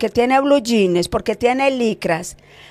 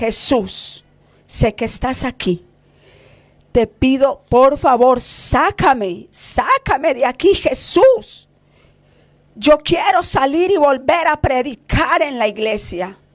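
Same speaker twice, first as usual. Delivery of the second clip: weeping, tearful, pleading cry; 2 semitones higher than usual. Preaching about a pastor begging Jesus, imitating a pastor crying. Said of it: "Él decía llorando".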